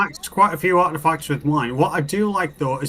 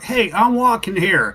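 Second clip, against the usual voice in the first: put-on thick New York Brooklyn accent; 4 semitones higher, 3 dB louder than usual. Listing accents people struggle with, demonstrating the Brooklyn accent. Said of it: "you get the Brooklyn accent of like".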